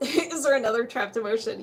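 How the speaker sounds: words spoken through a laugh.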